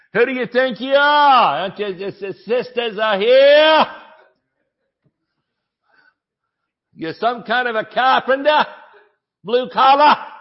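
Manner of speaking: put-on New Jersey accent. Speaker retelling the crowd's challenge to the carpenter in Mark 6, New Jersey accent. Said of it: "I've added the New Jersey touch to it".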